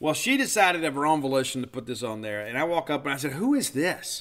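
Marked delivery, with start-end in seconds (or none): 3.3-4.2 mock snooty, derisive, pitched-up haughty tone. Retelling asking her about the CD she put on, in mock-haughty derision. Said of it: "with that same haughty tone of derision".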